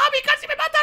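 high, loud, panicked protesting tone.

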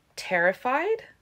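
high, doubting, disbelieving, skeptical tone. The narrator reacts to what she has just been told, skeptical. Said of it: "I said skeptically".

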